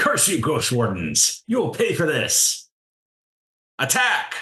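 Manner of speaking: very high-pitched, swooping yell. The game master voices the captain yelling at the Ghost Wardens. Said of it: "the captain yells".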